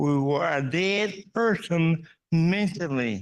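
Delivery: slow, measured delivery. Speaker repeats an earlier statement to the audience, slower and softer. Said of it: "a little bit slower and softer".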